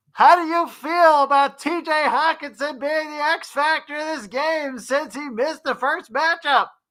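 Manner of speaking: very high-pitched, all-caps yelling. Reading a viewer's all-caps chat question aloud, yelling it. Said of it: "So I have to yell this".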